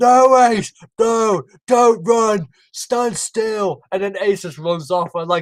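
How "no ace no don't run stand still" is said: acted, very slow, high, stretched-out shout. Retelling an outtake where the actor shouts to ace: imitating a shout. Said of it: "shouting to Ace".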